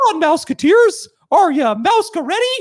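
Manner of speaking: squeaked out loud and bouncy. Urged by another speaker to commit, doing a Mickey Mouse voice. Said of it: "I used to do a pretty decent Mickey Mouse voice".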